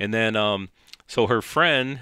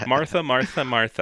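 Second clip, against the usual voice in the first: put-on lisping voice, much higher; 4 semitones higher than usual. Joking with another speaker, doing a Jan Brady voice with a lisp. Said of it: "that's Jan with a lisp".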